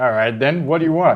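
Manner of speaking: loud shouting, calling out. A game character answers a call to halt: shouting back. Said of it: "He shouts back".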